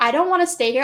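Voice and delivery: acted, near-crying, tearful, begging tone. Retelling being left behind on an island: imitating own past crying plea. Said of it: "I was practically, like, crying, like, begging her".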